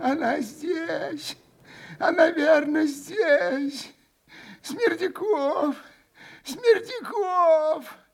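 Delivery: put-on faint rasping wheeze, very high pitched. The old man beckons Smerdyakov with his finger, barely audible wheeze. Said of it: "Чуть слышно хрипел старик".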